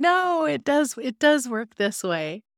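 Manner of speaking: acted-out, frustrated, insistent arguing back. Retelling reacting to a movie scene, imitating yelling at the tv. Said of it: "I was yelling at the T V".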